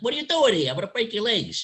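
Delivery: nasal, constricted voice pushed through the nose. Imitating how he talked, in a nasal, constricted voice. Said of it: "he talked through his nose, but his vocal cords were constricted".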